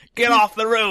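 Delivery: put-on loud, high British accent. Contrasting two versions of Alfred, showing how one talks: Gotham Alfred impression. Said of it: "it's not the Gotham Alfred where he talks like".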